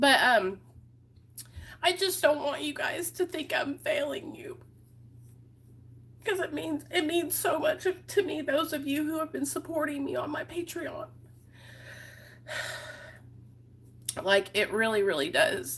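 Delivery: soft, breathy, tearful voice, crying through the words. Addressing the people supporting the speaker on Patreon, crying. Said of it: "I don't know why I'm crying".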